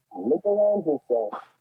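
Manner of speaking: very slow, hollow voice as if inside a can. Repeating a line when asked to say it again: like at the bottom of a Pringles can. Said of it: "you sounded like you were at the bottom of a Pringles can".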